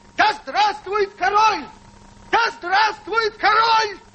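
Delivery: high, slow, drawn-out shout. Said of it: "Так вот он и кричит".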